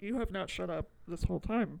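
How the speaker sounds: ordinary delivery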